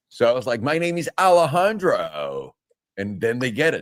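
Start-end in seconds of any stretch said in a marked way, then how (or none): 0.7-2.6 slow, high-pitched put-on American accent. Retelling giving a name in New York: imitating an American accent. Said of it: "talk to the gringos like they say tortillas".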